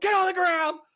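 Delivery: play-acted very high shouted, yelled voice. Retelling ordering a man in a parking lot to the ground, retelling a yell. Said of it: "So I yell at him".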